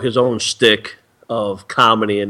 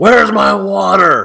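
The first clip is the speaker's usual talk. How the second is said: very high, raspy, rough bellow; 11 semitones higher, 6 dB louder than usual. Retelling how a TV personality yells when off air: imitating someone yelling. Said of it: "when he's off air and he yells".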